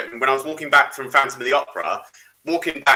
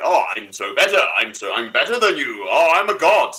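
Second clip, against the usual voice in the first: lofty, self-important, arrogant, boastful, godlike gloating tone. Imitating how Omega spoke to the Doctor: imitating Omega's arrogant voice. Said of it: "the way he spoke to the Doctor".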